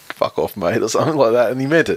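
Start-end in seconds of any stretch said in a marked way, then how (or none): 0.2-0.8 low muttering under the breath. Retelling how someone stormed off after winning: imitating muttering under his breath. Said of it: "under his breath he's just going".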